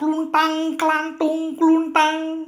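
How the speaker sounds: high, loud clanging can noise. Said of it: "Suaranya keras".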